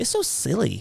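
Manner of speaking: put-on high-pitched, childlike little-kid delivery. Retelling what Kiana kept saying about the cat: imitating Kiana. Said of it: "She's like".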